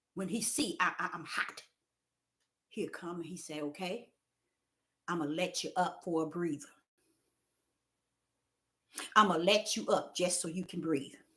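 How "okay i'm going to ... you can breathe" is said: soft, hushed, suddenly quiet voice. A self-described prophet tells the crowd what he says, quoting him in a quiet voice. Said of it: "he'll come with a quiet voice".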